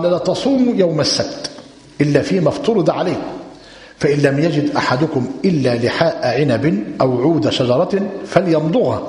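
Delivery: plain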